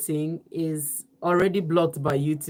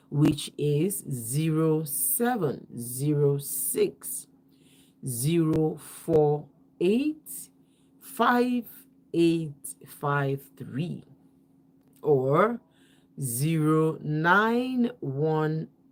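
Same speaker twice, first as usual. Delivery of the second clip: numbers read very slowly and deliberately. Giving out a call-in number at night, reading numbers very slowly. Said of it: "call these numbers as slowly as I can".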